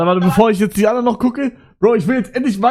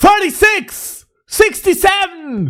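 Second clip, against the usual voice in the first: proper, very high shouting; 10 semitones higher than usual. Asked to re-record, the speaker tries the numbers again by shouting them. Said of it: "Soll ich es richtig schreien?".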